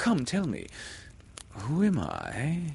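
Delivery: very high, swooping, almost humble, rising tone. Narrator reads a captain asking a mysterious voice a question: almost humbly. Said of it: "he said almost humbly".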